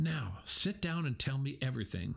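plain reading voice

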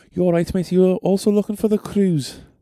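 put-on Scouse accent. Retelling what a Liverpudlian man asked them, in a Liverpudlian accent. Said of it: "That's the only accent I can kind of do".

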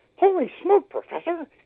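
put-on very high, bright, upbeat, eager, loud childlike voice. Demonstrating his naive childlike character addressing the Professor, Willoughby's high childlike voice. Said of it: "he's got this kind of high voice, and he's very up".

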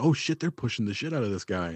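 ordinary talk, nothing marked

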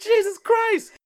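very high shouted exclamation of shock. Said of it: "And I'm like".

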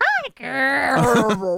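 awful, swooping put-on cartoon mouse voice. Joking about a costume voice changer that stops working, doing a bad Mickey Mouse impression. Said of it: "how awful our Mickey Mouse impersonations are".

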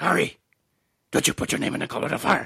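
calm, high, quick and creaky voice. Quoting a Harry Potter film line: Dumbledore voice. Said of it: "Dumbledore said calmly".

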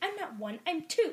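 put-on high, sassy young-teenage voice. Repeating the dragon's line about its age: imitating a sassy teenager. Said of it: "little teenage energy".

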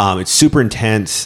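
normal talking voice

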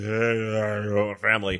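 put-on rumbling movie voice. Discussing a film character's diction, speaker does a rumbling Dom Toretto voice. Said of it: "he just rumbles in that one".

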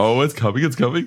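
put-on, very high, gushing, giddy excited play-by-play. Retelling a commentator breaking down on the call: imitating a giddy commentator. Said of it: "He gets so giddy".

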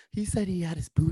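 hushed whisper. Passing on to the others what he said, in a whisper. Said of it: "I don't know why I'm whispering there".

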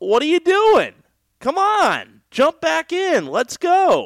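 put-on very high, slow, eager little-kid excited cheer. Speaker urges past listeners to come back and keep listening, excited like a little kid. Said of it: "I know I sound like a little kid there trying to get excited".

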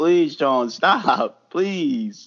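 very slow, drawn-out, desperate pleading tone. Retelling begging him to stop: imitating own past begging. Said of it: "I was begging him".

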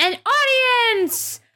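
shouting. Voicing a loud kid who bangs a pot and points a spoon: yelling. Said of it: "bangs on the pot and then points the wooden spoon at them and yells".

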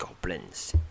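very quiet, hushed voice. Reading a game's story aloud, a tracker spots goblin signs: hushed tone. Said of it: "he says in a hushed tone".

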